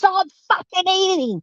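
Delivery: shrill, very high, all-out scream at top of lungs. Demonstrating an inner voice, the speaker is screaming at the top of its lungs. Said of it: "that voice to be screaming at you at the top of its lungs".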